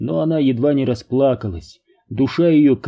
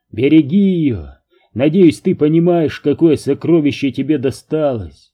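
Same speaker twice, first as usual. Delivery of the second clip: ordinary delivery, nothing marked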